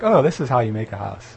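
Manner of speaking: usual speaking voice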